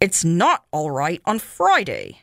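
speaking through gritted, clenched teeth. Mr. Allison answers his wife, through gritted teeth. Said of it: "said Mr. Allison between his teeth".

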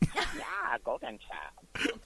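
breathy, half-whispered character voice. Doing an impression of James Hong after saying he talks like this: James Hong impression. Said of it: "That's him".

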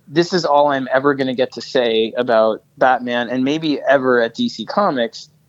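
ordinary talk, nothing marked

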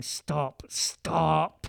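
imitated muttered undertone, under the breath. Retelling a proposal, imitating the girlfriend saying it under her breath to him. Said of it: "under her breath to him".

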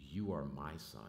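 gentle, sweet but firm motherly voice. A speaker tells the church what his mom said on adoption day, retelling her sweet but firm voice. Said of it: "in a sweet but firm voice".

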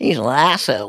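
put-on asshole pronounced with an American accent. Retelling what Panagotis said, imitating Panagotis's American accent. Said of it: "arsehole with an American accent".

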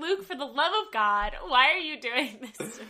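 loud, angry, pleading outburst. Retelling being refused contact solution: imitating own angry outburst. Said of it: "I was so angry".

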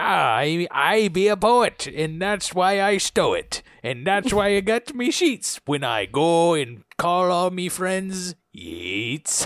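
put-on pirate voice and accent. Riffing on the poet yeats, rhyming as a pirate: pirate voice. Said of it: "Why are you turning everything into a pirate?".

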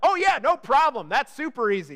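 very sarcastic, swooping, heavy, fake-easy confidence. Retelling a brother's reply in a meeting about a construction job: imitating Louie being sarcastic. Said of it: "He said it very sarcastically".

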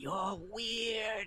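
high, soft, hushed half-whisper, close to the ear. Voicing a child who sneaks up behind a player's head: half-whispering. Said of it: "whispers in your ear and says".

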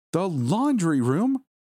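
very high, squeaky, squeaking yelp. Reading a story aloud, a character hearing the storage plan: yelling, voice squeaking. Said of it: "I yelled, my voice squeaking".

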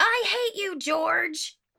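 put-on very high, very slow, drawn-out hollered shout. Retelling how a rider on a boat stood up: imitating a shout. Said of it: "and shouts".

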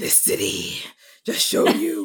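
loud, booming hero voice. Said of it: "I love doing impressions of that one".

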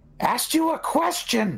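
shrill, very high, demanding in-character yell. Shouting at a foe who won't answer: shouting in character. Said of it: "I just shout".

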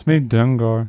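sad-sounding voice. Speaking with numb lips after Novocaine, introducing himself: sad. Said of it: "You sound so sad".

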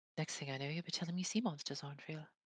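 soft, mumbled grumble, half to herself. Voicing a character who mutters a retort in a game: mumbling under her breath. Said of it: "gonna mumble under her mou-, under her breath".

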